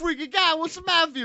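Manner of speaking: thick New York accent. On an episode done in new york accents throughout, speaking in a thick new york accent. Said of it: "will have thick New York accents".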